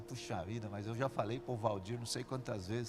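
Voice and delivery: low, quiet muttering under the breath. Showing what murmuring is, talking to oneself in the mirror: muttered under the breath. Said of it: "murmurar é a gente fazer isso. A gente olha no espelho e fala assim".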